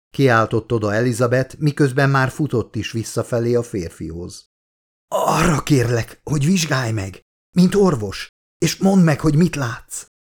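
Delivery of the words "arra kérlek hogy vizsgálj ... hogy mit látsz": groaning, labored short breath, higher. Charlie, sitting in the mud, asks Elizabeth to examine him; groaned, breathing with difficulty. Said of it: "nyögte Charlie nehezen véve a levegőt".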